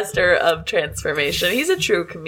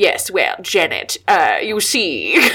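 put-on nasal actor voice. Trying a line from Rocky Horror: Tim Curry impression. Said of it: "trying to think of a Rocky Horror line".

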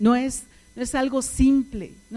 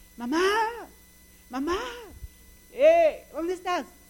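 high, mock boy's calling-out voice; 5 semitones higher than usual. Acting out a boy calling through the house for his mother, mock-yelling for mom. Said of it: "y empieza a gritar".

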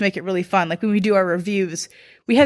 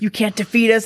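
whispering; 2 semitones higher than usual. Retelling whispering to a Steelers fan through his mic: imitating own past whisper. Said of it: "I'm standing there whispering".

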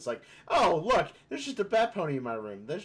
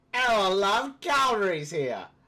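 fake British accent, high and loud; 7 semitones higher, 5 dB louder than usual. Speaker mocks how Americans attempt a British accent, in a mock British accent. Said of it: "they try and do a British accent".

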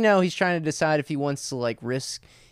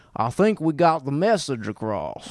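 put-on Kentucky accent. Imitating the CEO of the tobacco company in a movie, Louisville, Kentucky accent. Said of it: "Kentucky accent where he's like".

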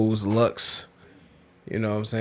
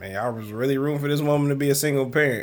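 normal talking voice

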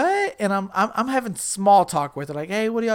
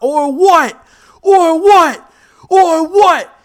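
challenging scream, very loud, slow and drawn-out; 9 semitones higher, 13 dB louder than usual. Retelling a standoff at a club, imitating own screaming.

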